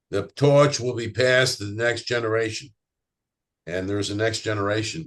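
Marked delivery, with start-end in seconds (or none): 0.1-2.7 imitated Boston accent. Quoting John Kennedy's 1961 inaugural address, deliver it in a Boston accent. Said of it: "I'll use my Boston accent".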